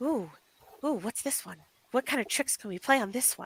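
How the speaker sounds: tiny, soft, very quiet little voice. Voicing one of two tiny creatures the players hear, in a tiny soft little voice. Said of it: "like very tiny, like little soft voices going".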